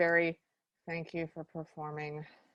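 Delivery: play-acted, very bored, low, flat monotone. Retelling the Berkeley judges thanking a performer, imitating a bored voice. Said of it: "Very bored voice".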